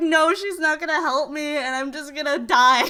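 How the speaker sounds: put-on panicked voice. Retelling what went through their head when the specialist seemed unhelpful: retelling own panic. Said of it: "I just started panicking 'cause I was like".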